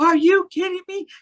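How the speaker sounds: put-on shrill shriek, very high, top of lungs. Retelling watching the Mandalorian finale: retelling a scream. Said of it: "I was screaming from the top of my voice".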